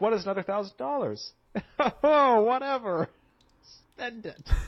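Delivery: very high, pained, forced fake nonchalance. Describing extra repair spending that kept piling up, pained attempt at nonchalance. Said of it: "I can hear the pain in your voice".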